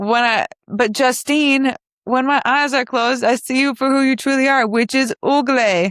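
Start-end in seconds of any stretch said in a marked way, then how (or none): 2.0-5.9 girl's voice badly faking a boy voice. Quoting a movie line, imitating a girl's put-on boy voice. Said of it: "trying to talk in her boy voice".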